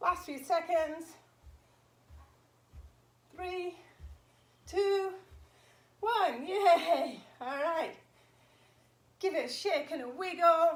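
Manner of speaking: out of breath. Counting down the last seconds of an exercise, out of breath after exercising. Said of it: "gotta get my breath back now".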